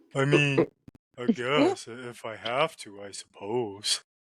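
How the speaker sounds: very slow voice, every word drawn out. Retelling an audition where asked to read as Patrick: Patrick Star voice. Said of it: "Can you read it to me as Patrick?".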